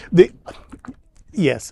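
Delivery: reluctant, swooping "yes" after a halting pause. Answering whether they watch a show: hesitant yes with a pause. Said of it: "why do you say it like that, where you have to, like, pause and go".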